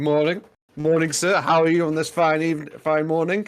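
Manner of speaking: high, snide, mocking, sarcastic politeness. Voicing a character greeting a man in a game: mocking sarcastic greeting. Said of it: "in a mocking sort of sarcastic way".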